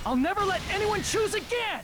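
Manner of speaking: high, furious outburst.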